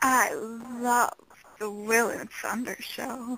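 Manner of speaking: sultry, seductive delivery with "love" drawn out. Asked to say a show promo line in the most seductive voice, seductive voice. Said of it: "in your most seductive voice possible".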